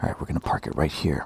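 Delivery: hushed, very quiet, barely audible whisper. Parking a vehicle on a street, whispering. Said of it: "I don't know why we're whispering".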